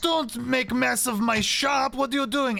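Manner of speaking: shrill, all-out screaming. Bashful crashes through the shop and Blinsky looks over, screaming Blinsky voice. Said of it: "as he's screaming about that".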